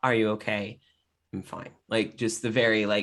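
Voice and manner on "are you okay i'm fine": very soft, quiet speech, lower pitch. Voicing two characters checking on each other: very soft voice. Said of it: "you hear a very soft conversation".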